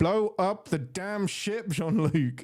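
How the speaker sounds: urgent, drawn-out cry, high and slow. Retelling a movie scene where a character screams at the captain: imitating Lily screaming. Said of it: "just screams at him".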